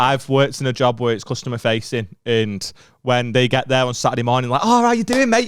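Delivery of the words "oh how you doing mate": mock overly cheerful chirpy voice, higher pitch. Retelling how customers greet a worker on saturday morning: imitating an overly cheerful customer. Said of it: "Your positivity has ruined my day".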